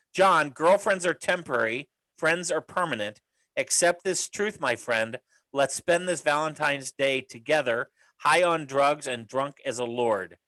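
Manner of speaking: usual speaking voice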